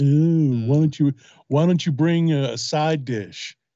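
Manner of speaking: mock friendly chatty tone. Imitating the friendly barbecue chatter of a man and his neighbor: mocking imitation. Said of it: "and they're like".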